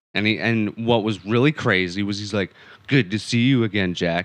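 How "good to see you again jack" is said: put-on deep, creepy demon voice. Retelling a movie scene to another speaker, in a deep, creepy demon voice. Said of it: "deep and creepy".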